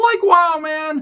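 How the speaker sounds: very high, drawling cartoon slacker voice impression. Mentioning an actor's later cartoon role, doing a Shaggy impression. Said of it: "that's the best Shaggy impression".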